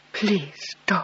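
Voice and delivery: soft, hushed, breathy whisper. Reading a story aloud, a husband begging his wife not to leave: whispering. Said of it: "And then in a whisper".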